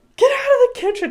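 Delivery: very high-pitched shouted yell. Retelling how she yelled at everyone: imitating someone yelling. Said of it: "She literally yelled".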